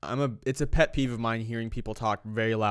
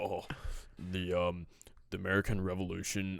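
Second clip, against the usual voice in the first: overdone, exaggerated deep, slow voice pushed down; 4 semitones lower, 8 dB quieter than usual. Describing how a friend talks during presentations, mimicking him in an exaggerated deep voice. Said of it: "he always makes his voice so deep".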